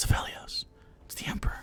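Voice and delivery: hushed, murmured crowd whispering. Voicing people in a shop who notice a visitor: crowd whispering. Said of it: "you hear people whispering".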